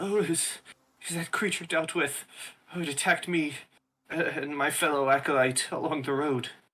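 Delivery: high, trembling, wavering voice. A narrator voices an attacked acolyte answering someone offering help, in a shaky voice. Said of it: "they say in like a shaky voice".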